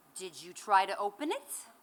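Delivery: put-on crisp Brooklyn accent. Retelling asking mom for help as a child, the speaker voices her reply: crisp Brooklyn accent. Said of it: "in her crisp Brooklyn accent said".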